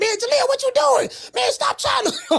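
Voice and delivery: shrill, very high, excited screaming. Telling a fighter how he reacted while watching the fight, retelling his own screaming. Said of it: "and I'm screaming".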